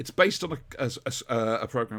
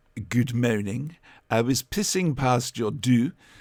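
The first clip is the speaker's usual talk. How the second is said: loud, awful fake French accent in English; 6 dB louder than usual. Describing a man speaking English with a terrible French accent: really bad French accent. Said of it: "with this really bad French accent".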